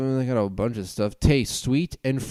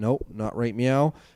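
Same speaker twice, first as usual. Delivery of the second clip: normal talking voice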